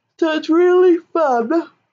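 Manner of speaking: speaking mid-yawn. Host of a paper-craft video, talking while yawning. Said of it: "sorry, yawning".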